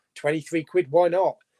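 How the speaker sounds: plain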